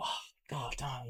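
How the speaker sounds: really annoyed swearing muttered under the breath. Retelling finding the wallet and cards stolen: imitating an annoyed exclamation. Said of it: "really, really annoyed".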